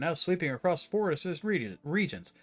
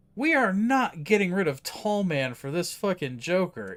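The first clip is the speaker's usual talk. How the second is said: ordinary talk, nothing marked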